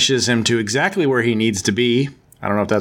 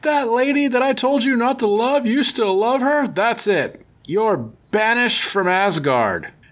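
high, mock angry outburst, squealed and outraged. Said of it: "he's like".

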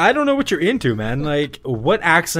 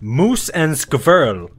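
bad, fake Russian accent. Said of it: "I am speaking in Russian accent".

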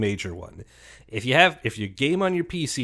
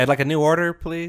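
courteous, casual, polite tone; 4 semitones higher, 4 dB louder than usual. Trying to say the phrase without sounding like a bad guy, like ordering at a restaurant. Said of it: "say it like you're at a restaurant and you're trying to get a different dish".

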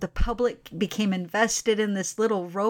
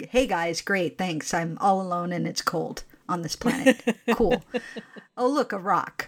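put-on sarcastic voice, lower pitch; 2 semitones lower than usual. Quoting the comedy account speaking as the Curiosity rover, mock-sarcastic Sarcastic Rover voice. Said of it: "the Sarcastic Rover comedy account".

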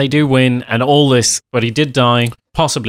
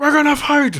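put-on, very high, shrill rallying battle yell. Mocking the main character's movie speech: imitating someone shouting encouragement. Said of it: "just kinda shouting random, like, encouragement".

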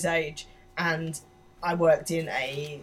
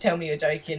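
ordinary delivery

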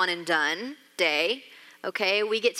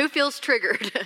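ordinary talk

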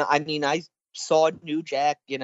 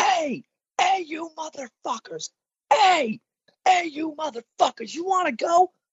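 put-on very high, belligerent, drunken top-of-lungs scream; 13 semitones higher than usual. Retelling how a drunk man yelled across a parking lot after the show, imitating a drunk man screaming. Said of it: "he's screaming at the top of his lungs".

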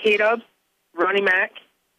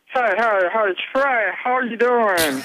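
failed rural Southern accent. Asked for their best redneck voice, greeting someone in an attempted redneck voice. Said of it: "What's your best redneck voice?".

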